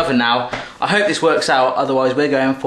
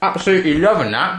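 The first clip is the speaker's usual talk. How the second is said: talking with mouth full while chewing, higher pitch; 4 semitones higher than usual. Tasting the snack made in a quick video, talking with mouth full. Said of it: "Excuse me, my mouthful".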